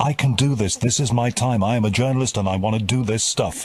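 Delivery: normal talking voice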